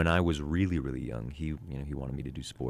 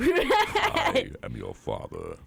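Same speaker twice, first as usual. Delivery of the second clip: very high, loud villain voice with big swoops; 6 dB louder than usual. Doing a movie line for others to guess: Darth Vader voice. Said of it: "Darth Vader".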